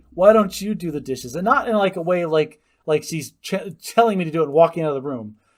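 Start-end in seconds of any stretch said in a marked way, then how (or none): 0.2-1.4 put-on sassy, snarky six-year-old voice. Retelling what a six-year-old said back about the dishes: imitating Jane getting snarky. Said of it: "got snarky with me and goes".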